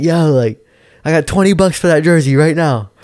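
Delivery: high-pitched hollering. Retelling shouting from a park train cart to a guy in a jersey, retelling a yell. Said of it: "I'm yelling like out of the thing".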